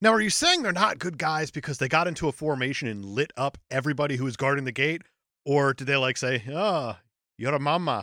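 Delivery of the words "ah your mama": vague, made-up, put-on Russian accent. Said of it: "in whatever Russian?".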